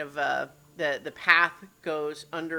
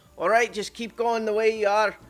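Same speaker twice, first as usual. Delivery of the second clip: put-on Scottish dwarf voice, loud and raised; 5 semitones higher, 5 dB louder than usual. A game master voices a dwarf speaking through a murder hole, in a Scottish accent. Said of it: "I don't know why I suddenly changed accents".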